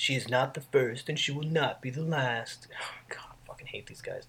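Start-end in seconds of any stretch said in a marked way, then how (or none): 0.0-2.7 seductive, sultry, sensual delivery. Reading aloud a quoted line from a typewritten confession letter: sensual voice. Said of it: "I was just trying to be sensual".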